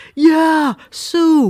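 put-on Boston accent. Retelling what a friend said about a job opening: boston accent. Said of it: "he was the Boston accent".

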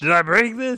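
shrill squawking at full blast, very high and loud. Mocking a friend's shopping habits by imitating Robert. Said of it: "heard [name] do that voice".

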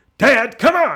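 full-on yelling, very high and very loud. Recalling a movie hero yelling at his father: imitating Harrison Ford shouting. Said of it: "shouting, you think of things like".

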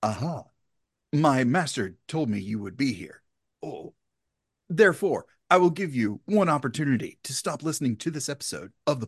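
dubbed foreign-film voice, like an English movie dub. Host launching into a bit for the episode, in a mocking dubbed-movie voice. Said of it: "I'm making fun of dubbing".

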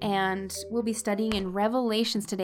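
ordinary delivery

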